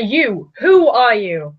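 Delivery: loud, forceful, very slow shouting. Confronting a Harlequin who suddenly appeared, in character: shouting at him. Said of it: "as you start shouting at him".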